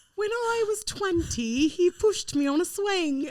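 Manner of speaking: very high, bad put-on cockney chimney-sweep accent. Attempting a line after admitting she is bad at accents: bad british accent. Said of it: "You were doing like a chimney sweep".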